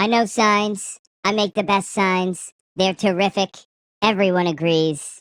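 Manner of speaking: very high, squeaky chipmunk-style voice. Reading a protest sign aloud after being asked to: Trump voice. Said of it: "This is my Trump voice".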